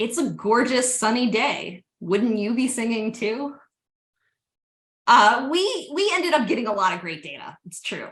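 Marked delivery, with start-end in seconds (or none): 0.0-3.6 put-on flat, bone-dry, expressionless deadpan delivery. Retelling his reply, eyes still on the birds: imitating Russ Greenberg's deadpan. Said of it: "with the complete Russ Greenberg deadpan voice".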